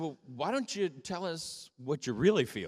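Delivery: put-on, mildly sarcastic, jabbing tone. Recalling a reply to someone going off about their feelings, retelling a sarcastic remark. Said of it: "just kind of being a little sarcastic".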